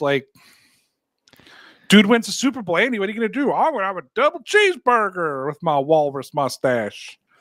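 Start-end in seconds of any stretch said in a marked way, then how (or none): 3.5-7.2 put-on southern US accent. Doing a bit where a Super Bowl winner answers, as Andy in a southern accent. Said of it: "I know he doesn't have a southern accent, but it worked better for the bit".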